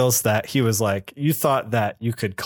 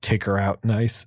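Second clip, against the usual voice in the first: imitated hushed voice, lower; 3 semitones lower than usual. Retelling a plot scene, Mastermind giving an order: imitating a quiet order. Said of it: "very quietly".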